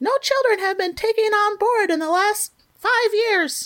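really high-pitched, piping character voice. Retelling what a character says while flipping through his watch communicator: high-pitched voice. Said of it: "He's really high-pitched like this".

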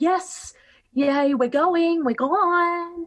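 rowdy, loud, high, stretched-out obnoxious cheering. Recounting people walking out at midnight, imitating their loud, obnoxious cheering. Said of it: "walking out really loudly and obnoxiously".

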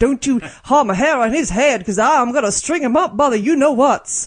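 put-on Western cowboy accent. Quoting a stereotypical western film script, western cowboy accent. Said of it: "That was the best accent ever".

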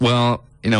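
usual speaking voice

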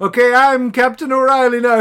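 loud, high shouted announcement, as over intercom. Retelling a scene where O'Reilly takes the ship: imitating O'Reilly shouting. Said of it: "over the intercom shouting out".

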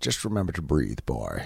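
clumsy movie-star voice. Recalling advice from Sean Connery: horrible Sean Connery impression. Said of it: "that was a horrible imitation".

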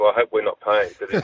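reenacted whispering. Retelling reading a pricey restaurant menu, retelling a whisper to the speaker's wife. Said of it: "I'm whispering to my wife".

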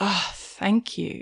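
soft, slow, relieved sigh. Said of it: "part of me goes".

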